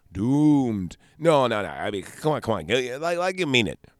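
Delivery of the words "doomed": even stronger emphatic stress on "doomed". Acting out another retake after a call for more: even more emphasis on doomed. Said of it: "More, more emphasis".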